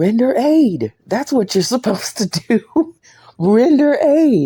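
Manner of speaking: piercing, very high screaming. Recounting a man asking what to do and the speaker's answer, retelling a scream. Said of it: "And I'm screaming".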